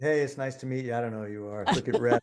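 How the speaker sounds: mock-blasé, put-on offhand voice. Retelling how Kip greeted someone, imitating Kip's blasé manner. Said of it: "he can have a very blasé manner".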